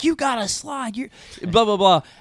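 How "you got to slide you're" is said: mock, high, mild scolding half yell. Retelling him yelling at a player who didn't slide into third, imitating someone yelling. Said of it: "he yells at him".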